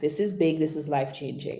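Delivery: level, unvaried, flat monotone with no lift. Demonstrating a sentence for the listener to repeat, said monotone. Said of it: "That was just monotone".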